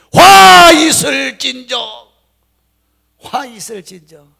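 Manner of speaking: fierce, very loud, slow, high-pitched shout.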